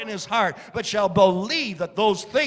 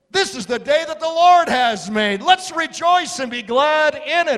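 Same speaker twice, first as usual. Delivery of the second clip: mock, loud, high, called-out proclaiming shout; 6 semitones higher, 5 dB louder than usual. Retelling calling out to workers in the front yard: retelling a shout. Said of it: "And I shouted out".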